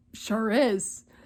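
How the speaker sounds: ordinary delivery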